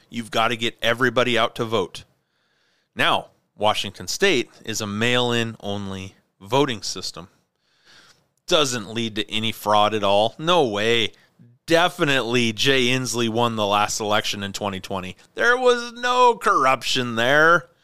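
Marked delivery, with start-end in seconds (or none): 8.4-17.6 heavy, laid-on-thick sarcasm with swooping tone. Talking about Washington State's mail-in voting system, sarcastic. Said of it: "If you can sense the sarcasm in my voice".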